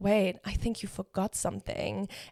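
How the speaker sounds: smug, self-satisfied, pointed tone. Retelling what he said as everyone was about to leave: imitating a smug remark. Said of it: "he says it with this, like, like, smug smirk".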